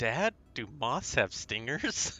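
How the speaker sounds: hushed stage half-whisper. Retelling a son's question during a movie: imitating a half-whisper. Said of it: "whispers into my ear".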